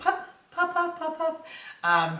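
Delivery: very high, sing-song, swooping pet-calling voice. In a training video, a speaker calls the dog for its attention in a high voice. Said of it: "I am using a high voice".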